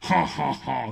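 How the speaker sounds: put-on French laugh, done the American way. Recalling old promos, the speaker redoes a fake French laugh, American-style. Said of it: "je riais à la française en mode américain".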